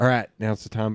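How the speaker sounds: ordinary talk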